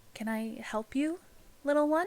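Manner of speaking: gentle, soft tone. Game master voices an elven woman addressing a player's character, in a softer voice. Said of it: "you hear a, a softer voice address you".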